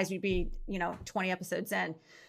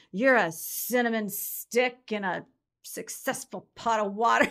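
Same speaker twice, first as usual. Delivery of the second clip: put-on slurred words. Retelling an odd remark a woman threw out, imitating slurred words. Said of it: "slurring her words going".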